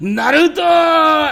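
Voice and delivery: shrill, loud, high-pitched, full-throated shout. Retelling a scene where Sasuke yells Naruto's name, yelling Naruto like Sasuke. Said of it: "Sasuke yells Naruto's name".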